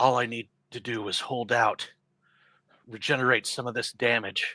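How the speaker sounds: steady, inward talk to oneself. Hearing an inspiring fanfare charge, Octomorph murmuring to himself. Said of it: "murmurs to himself".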